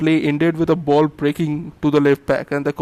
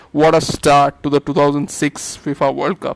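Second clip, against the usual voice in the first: plain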